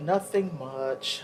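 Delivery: slow, drawn-out mock of a telling tone.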